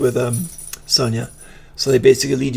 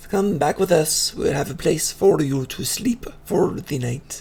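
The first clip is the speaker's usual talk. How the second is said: imperfect, broken Common-tongue speech; 4 semitones higher, 3 dB quieter than usual. The game narrator voices a girl inviting the player back, speaking broken Common. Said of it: "broken common".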